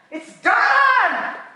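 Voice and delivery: screaming, very high-pitched. Speaker repeats a declaration to listeners: screaming. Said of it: "I'm sorry, I'm screaming".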